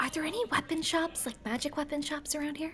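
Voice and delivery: soft, hushed half-whisper. Asking in character about magic weapon shops: half-whispering. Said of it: "you're whispering".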